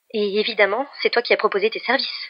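short, sharp, curt tone. Messi answers Alex, trying to hide her confusion: replied curtly. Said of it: "répliqua sèchement Messi".

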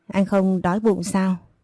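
ordinary delivery

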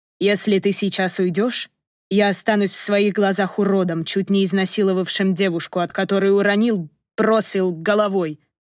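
usual speaking voice

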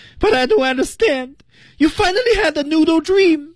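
tearful crying voice. Asked to redo the daddy's line with feeling, the teacher reads it in a crying voice. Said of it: "这带着哭腔的".

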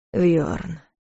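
bewildered breath out. Facing his brother the emperor's angry look, a man speaks, puzzled, breathing out. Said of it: "озадаченно выдохнул Дарс".

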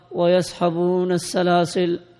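ordinary delivery

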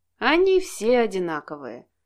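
tender, affectionate, loving, swooping sing-song tone. A man responds to another's complaint about his mother: said tenderly. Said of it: "ласково произнес Алексей".

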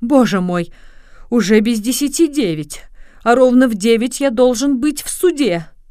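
crying out, exclaiming. A lawyer among upset passengers on a diverted trolleybus: exclaiming. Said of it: "воскликнул адвокат".

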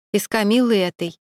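plain

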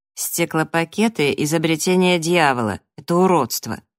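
plain

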